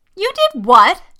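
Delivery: very loud, very high, shrill, piercing shriek. A woman reacts to her companion's confession, shrieking. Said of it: "Vivian shrieked".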